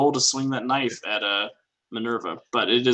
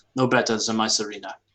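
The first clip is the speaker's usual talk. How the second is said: put-on German accent character voice. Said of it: "He's supposed to have a German accent".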